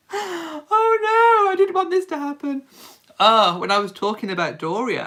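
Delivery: very high, weepy crying voice, swooping in pitch. Speaker breaking down while talking about Doria, crying. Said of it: "I'm actually crying".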